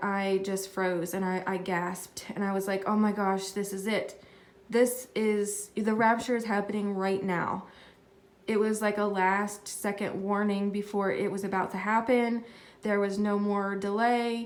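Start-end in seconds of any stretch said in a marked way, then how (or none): none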